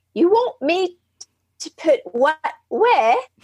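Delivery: put-on speaking in English accent. Retelling what a woman said during a group exercise: english accent. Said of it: "Not a bad English accent either".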